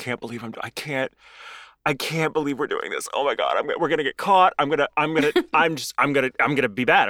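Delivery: put-on nervous, panicky voice. Retelling a nervous wife's lines from a movie scene, imitating someone nervous. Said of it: "She's so nervous".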